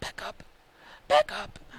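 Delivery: spooky yet sweet cartoon ghost voice. Retelling a man's reply when told to have his backup ready, in a Casper the Ghost voice. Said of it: "it was like a Casper the Ghost voice".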